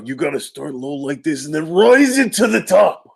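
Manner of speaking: low start, then rising. Answering an audience request to do a voice: Macho Man voice. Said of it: "Could you do your Macho Man voice?".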